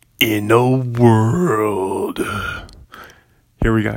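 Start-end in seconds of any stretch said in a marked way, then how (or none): 0.2-2.2 epic movie trailer narrator announcer read. Practicing a catchphrase, the speaker gives another take: movie trailer guy impression. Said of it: "here's a good take".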